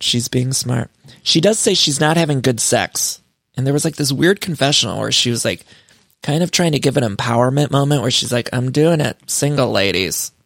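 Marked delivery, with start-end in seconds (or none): 8.5-10.3 put-on flat monotone voice. Imitating a cast member's confessional empowerment moment: imitating Erica's monotone. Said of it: "very Erica monotone".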